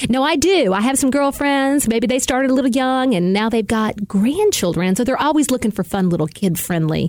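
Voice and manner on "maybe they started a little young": Southern American accent. Answering after being complimented, saying it in a Southern type of way. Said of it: "the way you said it in a Southern type of way".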